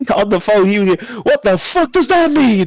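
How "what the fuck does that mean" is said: put-on Irish brogue, pitched up. Retelling a phone call about a piping job: Irish accent. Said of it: "imagine a more deeper Irish accent than that".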